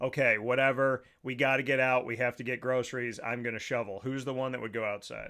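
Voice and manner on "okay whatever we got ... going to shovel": usual speaking voice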